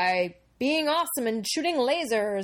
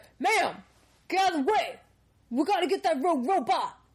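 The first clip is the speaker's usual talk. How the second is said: pitched-up, military soldier-style voice; 7 semitones higher than usual. Acting out an improvised movie scene, acting as company soldiers. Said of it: "and they're like".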